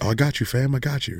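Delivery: silky, smooth late-night radio host voice. Imitating a former waiter who had a smooth radio voice. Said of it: "this dude had the radio voice".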